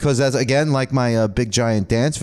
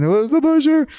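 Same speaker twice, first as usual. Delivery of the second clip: very high, shrill, tearful crying scream; 4 dB louder than usual. Retelling asking the family about a name: imitating screaming and crying. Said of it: "I was screaming and crying".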